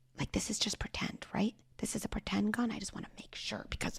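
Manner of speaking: soft whisper.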